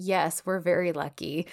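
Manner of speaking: slow, amused delivery with giggles throughout. Retelling a character's reply on the boat: imitating a giggly reply. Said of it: "he kinda gets giggly and he's like".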